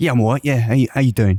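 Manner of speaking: casual, put-on South London accent. Playing Jack in a made-up chat: Danny Dyer impression. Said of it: "You sound like Danny Dyer".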